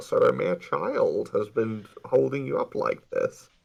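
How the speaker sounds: rough, creaky, raspy villain voice. Voicing the game villain Maxie during his villain monologue: Bane voice. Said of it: "I'm imagining him sounding like Bane".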